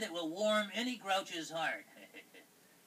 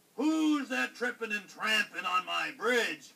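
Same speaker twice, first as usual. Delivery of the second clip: big, loud, bellowing, roaring troll voice; 5 dB louder than usual. Narrating the billy goats Gruff story, voicing the troll: roaring troll. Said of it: "roared the troll".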